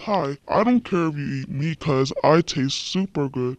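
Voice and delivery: voice dropped way down, very low and deep. In a story about food, the meat speaks up, low voice. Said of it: "The meat said in a low voice".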